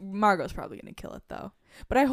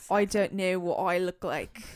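odd, weird put-on British accent. Trying to recall a man's line on a podcast, imitate his weird British accent. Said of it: "we don't need to hear your accent".

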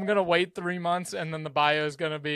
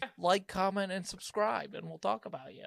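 teasing, mocking put-on voice; 4 semitones higher, 8 dB quieter than usual. Ending a podcast episode, imitating a podcast co-host. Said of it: "Is that an impersonation of me".

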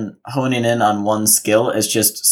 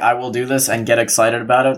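plain

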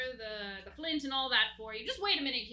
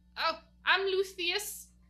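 put-on hunched old goblin creature voice, pitched up; 6 semitones higher, 4 dB louder than usual. Voicing an old hunched creature answering a knock at the door: old goblin voice. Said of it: "old looking, hunched over creature".

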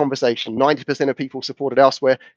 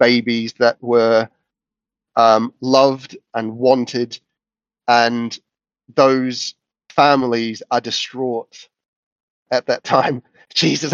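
moved, slow, emotional delivery. Speaker talking on a personal subject, getting emotional. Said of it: "I'm getting emotional about this".

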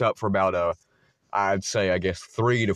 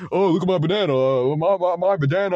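very high, squeaky, loud voice; 10 semitones higher, 6 dB louder than usual. Retelling how Carson acted while waving bananas around: imitating Carson. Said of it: "it's what he sounds like".

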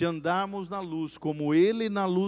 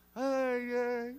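crying, whimpering, high, tearful pleading voice; 6 semitones higher than usual. Retelling a crying congregant's confession to the pastor: imitating someone crying.

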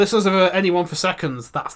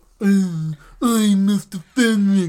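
very slow, drawn-out, put-on mocking character voice; 3 semitones higher than usual. Imagining how Fenwick will react to being shown a prize: imitating Fenwick's voice. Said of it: "That's what he sounds like".

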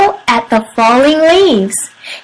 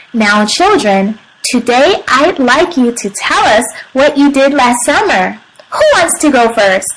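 usual speaking voice

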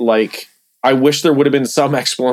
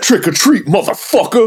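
very high-pitched put-on voice; 9 semitones higher than usual. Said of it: "Please do the [name]".

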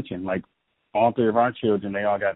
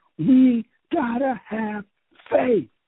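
put-on child's shout, very high and very slow; 4 dB louder than usual. Retelling what the daughter said to the crying boys: imitating a yelling six-year-old. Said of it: "she just yells at them".

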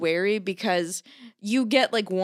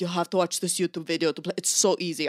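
put-on deep voice with Swedish accent. Imitating a friend insisting the game is easy: deep Swedish voice. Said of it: "she's Swedish and has a deep voice".

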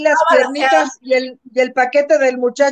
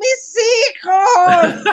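sudden, pitched-up yelled exclamation; 7 semitones higher than usual. The speaker retells how someone saw them and began yelling, retelling someone yelling. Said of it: "empezó a gritar".

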